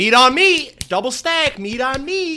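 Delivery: high, loud, slow, drawn-out belted delivery. Retelling quoting one of his videos: quoting Sketch. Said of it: "I've been quoting the dude".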